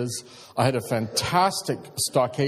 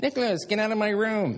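high, taunting, mocking copycat echo; 9 semitones higher than usual. Retelling how a son mocks his sister by echoing her: imitating Nicholas mocking his sister. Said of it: "I mean imitating each other".

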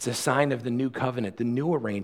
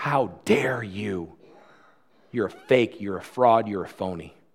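put-on devil whisper, lower; 3 semitones lower than usual. Preaching on sin, voicing Satan in the ear: Satan whispering. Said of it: "Satan whispers in our ear".

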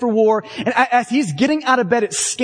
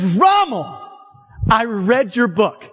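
slow, boisterous, cocky put-on gloating crow. Retelling the moment amid the carnage when Patton addresses Rommel, in a loud, boisterous Patton voice. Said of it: "loud, boisterous, "I just killed you" type of a voice".

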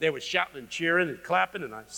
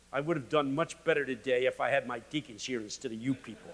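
plain

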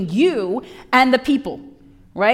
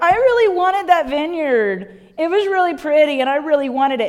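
mock tearful, sobbing, blubbering crying voice; 3 semitones higher than usual. Retelling Ahab wanting the vineyard, imitating Ahab crying. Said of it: "Stop crying".

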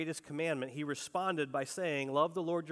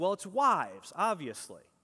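swooping, sarcastic delivery; 3 dB louder than usual. Retelling a man's answer when asked about a verse, imitating his sarcastic reply. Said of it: "And sarcastically, he kind of responds back".

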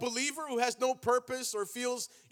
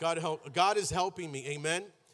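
ordinary talk, nothing marked

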